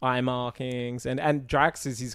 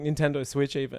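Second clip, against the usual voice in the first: ordinary talk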